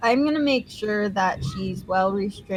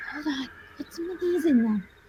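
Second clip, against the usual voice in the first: close, high, hushed half-whisper; 6 semitones higher, 4 dB quieter than usual. Player character stops another to speak into their ear, half-whispering. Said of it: "whisper in your ear".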